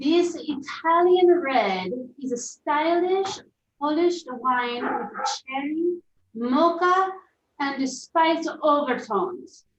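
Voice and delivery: attempted, put-on Italian accent. Asked to read a wine description aloud, reading it in an attempted Italian accent. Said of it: "should we read this in an Italian accent".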